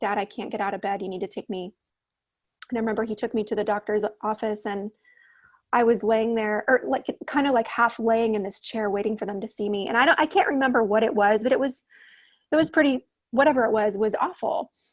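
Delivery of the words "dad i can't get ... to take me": quieter put-on tearful crying voice. Retelling a call to dad while sick, imitating own past crying. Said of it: "I called my dad crying".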